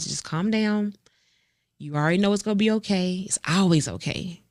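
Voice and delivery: put-on panicked self-calming, talking oneself down aloud. Retelling driving toward an accident scene: retelling panicked self-calming. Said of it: "I said it out loud".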